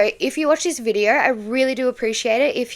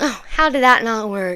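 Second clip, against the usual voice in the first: put-on, snide, condescending, talking-down sarcasm. Imitating how someone talked during a test: imitating a condescending sarcastic tone. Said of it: "sort of condescending, sarcastic, like, that's how he was talking".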